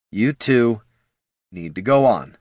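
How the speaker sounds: even, slow, measured, grudging, reluctant cadence. The bard turns to Jin and Gorm, speaking in a measured, reluctant cadence. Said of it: "spoke in the measured cadence of a messenger who loathes the message".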